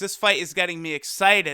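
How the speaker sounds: ordinary talk, nothing marked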